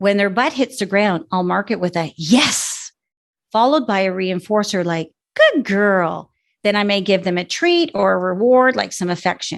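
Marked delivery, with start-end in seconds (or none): 5.3-6.3 changed, praising cue tone. Trainer demonstrating a reinforcer after the dog sits, in a changed praise-marker tone. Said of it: "you can hear in those markers or that command that my voice tone changed".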